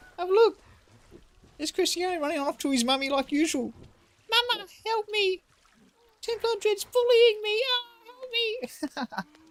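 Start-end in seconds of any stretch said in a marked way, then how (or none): 4.3-9.2 put-on girly squeal, much higher and slower. Mocking Cristiano running off to his mummy, squealing girly voice as Cristiano. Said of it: "little girly voice squealing".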